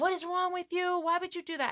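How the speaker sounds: mock, very high shrieking scream. Retelling being screamed at while cleaning: imitating Kevin screaming. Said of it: "And he screamed at me".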